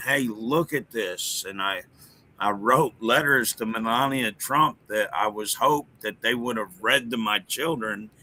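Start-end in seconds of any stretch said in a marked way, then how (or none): none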